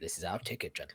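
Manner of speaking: very quiet, hushed murmur under the breath. A player speaks in character so no one learns what Bill carries, very quiet. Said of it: "I'm going to say very quietly".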